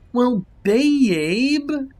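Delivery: sing-songy understanding tone. Reading a story, answering a girlfriend who asks for help: sing-songy understanding tone. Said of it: "I said in a sing-songy way".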